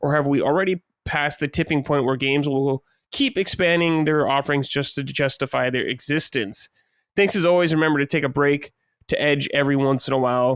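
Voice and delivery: ordinary delivery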